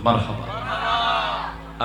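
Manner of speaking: marhaba called out high, very slow, drawn out.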